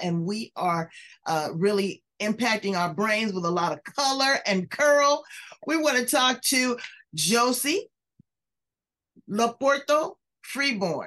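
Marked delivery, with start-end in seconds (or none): 7.1-11.1 deliberate, slow, careful, drawn-out pronunciation. Introducing the guest by full name, saying the name slowly. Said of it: "I gotta say it slow".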